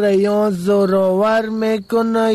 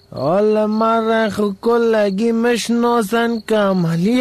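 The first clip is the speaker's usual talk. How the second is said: ordinary talk, nothing marked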